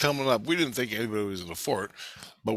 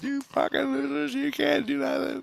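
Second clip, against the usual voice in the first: put-on very high, raspy, rough kid's shout. Retelling how a kid on a steel fort yelled at them: imitating a kid yelling. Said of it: "He's yelling at".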